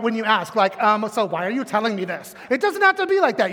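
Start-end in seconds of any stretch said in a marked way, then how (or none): 0.8-2.3 snippy, sassy, sarcastic, attitude-laden tone. Showing how not to ask the question: sassy. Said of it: "you don't have to get all sassy about it".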